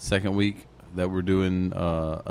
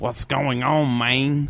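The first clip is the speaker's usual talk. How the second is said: loud, bad fake Jamaican accent drifting into Mexican; 6 semitones higher, 5 dB louder than usual. Retelling a younger brother showing off his accent, bad jamaican accent.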